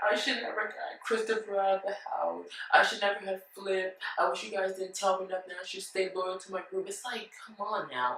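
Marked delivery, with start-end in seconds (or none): 0.1-6.9 weepy, tearful crying voice. Retelling how a houseguest complained afterward: imitating someone crying. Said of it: "And then she's crying".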